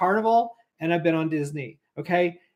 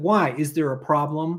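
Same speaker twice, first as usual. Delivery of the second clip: snippy tone with attitude; 3 semitones lower than usual. Retelling what guest services said on the phone: imitating a tone with attitude. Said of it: "they kinda gave you attitude".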